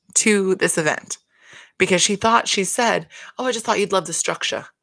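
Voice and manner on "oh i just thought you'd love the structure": quick, put-on British accent. Speaker tells listeners what a woman said at an event, British accent as Kathy. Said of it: "I don't know why I did a British accent for Kathy".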